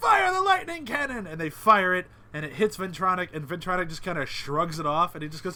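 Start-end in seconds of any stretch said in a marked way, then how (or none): 0.0-1.3 very high, shrieking, screamed delivery. Describing a battle scene, retelling The Monarch screaming. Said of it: "and the Monarch screams".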